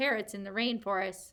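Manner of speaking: ordinary delivery, nothing marked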